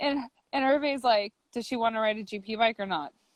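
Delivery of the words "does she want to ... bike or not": acted-out flat, mock-deadpan delivery. Recounting what someone asked in the story, retelling a deadpan question. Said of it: "Like total deadpan".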